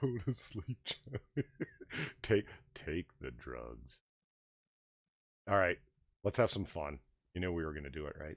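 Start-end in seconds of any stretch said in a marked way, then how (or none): 0.0-4.0 soft, slow, soothing lulling voice. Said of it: "sounds like he's trying to put small children to sleep".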